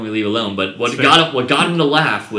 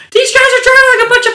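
very loud, very high-pitched yell at full volume; 11 dB louder than usual. Retelling what you heard over a bad radio with people around, imitating Trent's full-volume high pitch. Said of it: "at full volume, at full high pitch".

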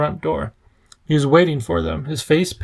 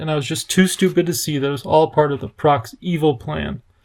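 ordinary delivery

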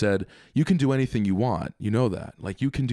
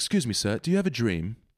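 put-on English accent throughout. Retelling what a guy asked a stranger in a video: English accent. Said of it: "he's English".

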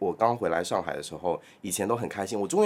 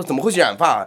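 play-acted, shrill, very loud, furious scolding tirade; 7 semitones higher, 9 dB louder than usual. Retelling how mom scolded them about dyed hair: imitating mom scolding angrily. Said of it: "然后就是大骂".

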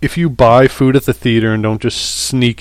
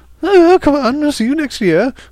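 very high-pitched put-on British accent. Retelling a moment from running down the street, in a British accent. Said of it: "I don't live in a British neighborhood".

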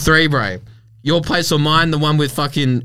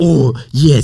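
put-on Spanish accent, louder; 5 dB louder than usual. Retelling a scene from The Pope's Exorcist: Russell Crowe Spanish accent. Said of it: "he's got a Spanish accent the whole time".

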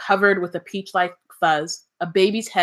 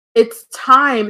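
awestruck, higher and louder; 5 semitones higher, 8 dB louder than usual. Reading a book aloud, voicing a character's line, awestruck. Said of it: "said Hermione in an awestruck voice".

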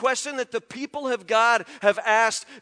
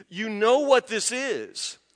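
ordinary delivery

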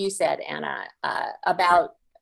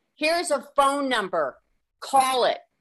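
put-on yelling, pitched up; 6 semitones higher than usual. Retelling what a drapery salesman called out the window: imitating someone yelling. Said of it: "he yells out the window".

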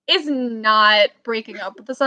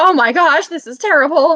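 loud, all worked-up panicked freaking out; 3 semitones higher, 5 dB louder than usual. Retelling seeing her name on the class roster, retelling getting worked up. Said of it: "And then I got all worked up".

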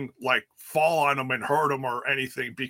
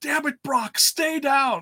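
mock commentator yell, very high and fed-up; 13 semitones higher, 3 dB louder than usual. Recounting how he screamed at the ref, then at Brock: retelling a yell at Brock. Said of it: "And then yelling at Brock".

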